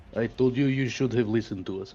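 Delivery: put-on Russian accent. Speaking in character to another player: russian accent. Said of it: "that was Russian".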